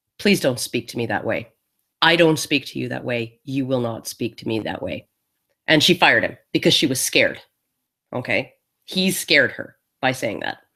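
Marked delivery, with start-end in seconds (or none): 0.2-5.1 soft-spoken, dead-calm, level voice. Retelling how a man answered the woman who then fired him, imitating a very calm warning. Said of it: "very calmly".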